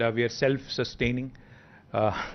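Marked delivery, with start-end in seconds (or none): none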